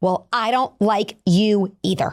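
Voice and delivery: acted-out screaming. Retelling a mom's reply to her daughter, imitating someone screaming back. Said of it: "the mom screamed right back".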